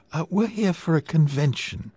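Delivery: pleasant, sweet tone. Helen answers the skirted young men in the hotel lobby, sweetly. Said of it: "Helen said sweetly".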